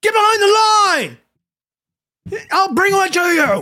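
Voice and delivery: shrill, very high, acted-out screaming. Retelling how an old man screamed at them over getting a cart; imitating an old man screaming. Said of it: "screams at me".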